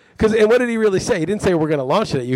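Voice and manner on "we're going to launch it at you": ordinary talk, nothing marked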